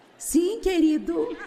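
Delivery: mock-sweet honeyed tone. Recalling how the speaker once talked to him: put-on soft sweet voice. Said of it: "Eu tentei falar mais suavemente e doce".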